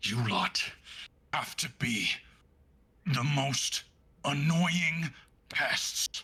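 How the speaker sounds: words forced out through a clenched jaw. Narrator voicing a character who cocks his head at the group: through gritted teeth. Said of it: "through gritted teeth".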